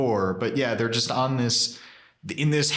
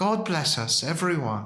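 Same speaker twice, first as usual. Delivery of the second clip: mock British accent, higher pitch; 4 semitones higher than usual. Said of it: "They do have English accents now".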